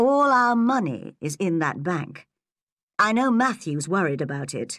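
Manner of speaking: ordinary delivery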